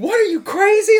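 very high, loud, breezy, offhand dismissive tone. Telling a story, acting out a man's reply to a woman: retelling playing it off. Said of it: "Like trying to play it off".

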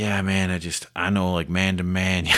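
plain

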